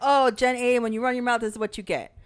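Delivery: ordinary talk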